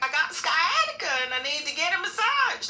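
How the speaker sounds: mock, very high, loud, near-tears voice. Retelling what an older customer said: imitating a tearful customer. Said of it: "I'm saying it like she was saying it".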